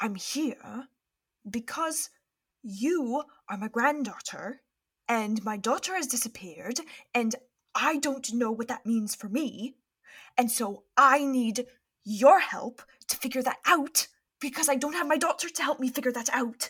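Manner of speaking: private, hushed, earnest tones. Voicing a man who answers his granddaughter's questions, speak in hushed tones. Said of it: "They're speaking in hushed tones".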